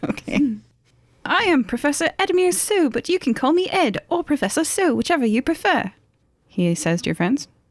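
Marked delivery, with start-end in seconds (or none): 1.3-5.9 put-on bad British accent, pitched up. In character, introducing himself to the other players' friends: bad British Professor Edmure So. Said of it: "It's my worst accent".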